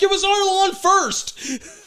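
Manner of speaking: shrill, very high, loud yell. Continuing a story about a man shouting at people, imitating trees yelling back. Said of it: "the trees are yelling back".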